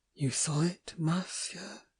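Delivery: husky, hoarse, hushed whisper. Manya speaks to the monsieur after they carry a man to bed, hoarse whisper. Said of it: "I heard Manya whisper hoarsely".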